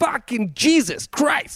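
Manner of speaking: very high-pitched delivery. Imitating a Boston comedian's way of talking: Bill Burr impression. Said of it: "That's how he talks".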